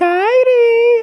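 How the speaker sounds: cutesy, shrill, high, and drawn out. Retelling how Asuka first called to Kairi, imitating Asuka calling cutesy. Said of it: "in a cutesy way".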